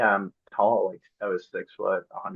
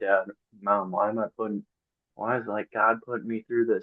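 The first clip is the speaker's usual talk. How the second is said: acted-out, mock-tearful pleading voice. Speaker acts out her past self crying to mom and dad, retelling a crying plea. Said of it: "there was days that I was like crying to my mom and dad".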